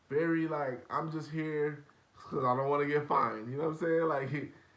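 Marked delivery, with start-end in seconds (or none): 0.9-3.5 flat, monotone voice. Imitating Kyrie answering how excited he is: monotone imitation of Kyrie. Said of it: "just very monotone".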